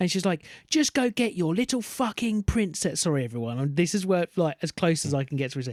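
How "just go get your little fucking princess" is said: acted, furious, shrill, top-of-voice angry yell. Retelling a mum yelling at her daughter in a theme park: imitating a mum shouting. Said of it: "Top of her voice".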